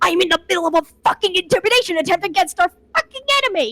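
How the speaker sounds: high, enraged, fed-up furious scream. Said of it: "Aster screams".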